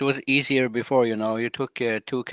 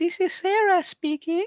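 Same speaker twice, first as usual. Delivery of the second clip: fake girl voice, pitched higher. Answering a request for someone with a girl voice: put-on girl voice. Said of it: "Do you have anybody on there with a girl voice?".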